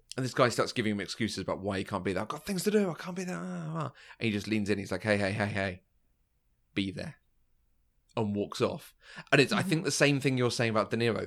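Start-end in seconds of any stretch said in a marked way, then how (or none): 5.1-7.2 put-on low, quiet, hushed voice, much slower. Retelling a scene where a man leans in, imitating a low, quiet command. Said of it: "when he goes really low".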